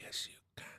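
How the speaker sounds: whispered voice. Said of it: "Can you still hear me if I whisper?".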